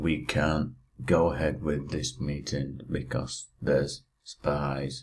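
plodding, slow, low, drawn-out dragging delivery. Retelling a scene where Malfa halts a meeting, the speaker mimics it dragging. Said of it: "or are you doing an impression of the?".

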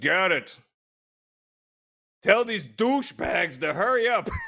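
blunt, impatient, brash tone, high and rising. Retelling a Russian cosmonaut in a beer line turning to him, really loud voice. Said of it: "in a really loud voice".

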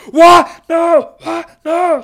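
very loud, very high, very slow, shrill, drawn-out screaming. Retelling a tennis player's meltdown over a ball: imitating Troitsky screaming. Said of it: "he's just like".

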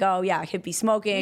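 ordinary delivery

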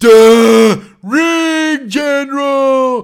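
mock dopey announcer voice, high, loud and slow. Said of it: "He sounds, like, simple".

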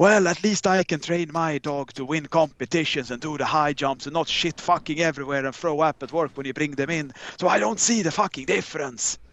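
put-on odd Russian Finnish accent. Retelling how a woman yelled at them, in a weird Russian-Finnish accent. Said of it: "she had like this weird russian finnish accent".

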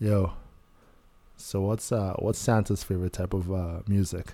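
put-on, mock sexy seductive voice. Asking the group a joke about santa's favorite music: sexy voice. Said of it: "Take your sexy voice off".

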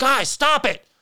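loud yelling. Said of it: "and I yell".

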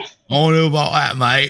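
drawling pirate accent. Speaker keeps repeating a quoted phrase as others judge the accent: Jack Sparrow-like voice. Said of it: "You sound like a fat Jack Sparrow".

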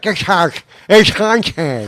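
talking as if through prop teeth. Retelling how an actor playing a haunted guy talked with prop teeth in: imitating Scott Hart talking with teeth in. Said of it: "He's trying to talk with those teeth in".

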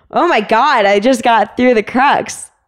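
put-on, high exclamation called out. Retelling getting through the climb's crux and calling down to him: retelling a yell down. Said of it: "I yelled down at him like".

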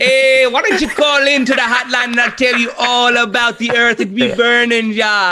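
fake Caribbean accent, high pitch. Told your accent just became Miss Cleo, keep the bit going in a Miss Cleo accent. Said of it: "do this accent".

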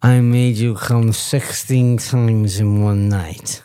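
put-on acted slurred voice. Retelling what a man said to a woman, the speaker imitates a stroke voice. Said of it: "in my best stroke voice".

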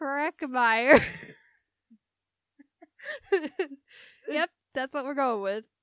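loud, giggling, laughing through the words. Trying to say a name aloud again, laughing while talking.

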